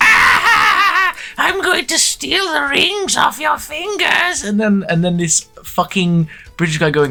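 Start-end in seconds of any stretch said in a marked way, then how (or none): 0.0-4.4 imitated villainous old man. Retelling a show's opening scene, imitating an evil old man. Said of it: "evil old man going".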